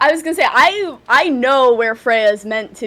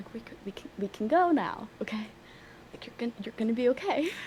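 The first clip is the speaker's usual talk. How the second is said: hushed whisper; 15 dB quieter than usual. Nodding toward things in the forest during the game, whispering. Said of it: "So I'm still whispering".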